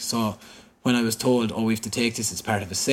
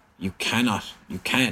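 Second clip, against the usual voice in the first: plain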